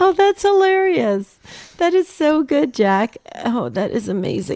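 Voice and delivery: high, laugh-filled talking. Reacting to a caller's joke, laughing while talking. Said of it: "I'm laughing way too hard".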